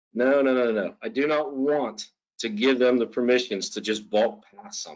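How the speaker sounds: ordinary delivery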